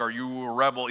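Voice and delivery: mock robotic voice-changer voice. Retelling a costumed man talking with guests through a voice changer, the speaker quotes him: imitating a robotic voice. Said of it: "makes it sound kind of robotic".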